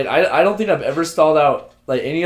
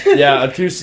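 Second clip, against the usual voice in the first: ordinary talk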